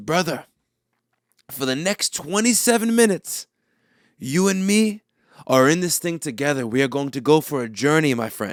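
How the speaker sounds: put-on French-sounding voice. Retelling what Jake said after getting in his car, French-sounding. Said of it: "You sound French".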